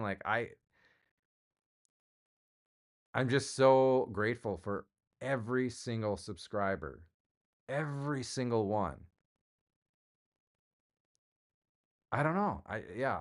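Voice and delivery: slow, slightly choked-up voice. Thanking every single subscriber, choked up a little. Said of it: "I'm just like choked up a little bit".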